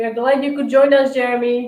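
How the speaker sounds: loud shout. Greeting jeremy, who has just joined them, while shouting. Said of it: "why I'm shouting".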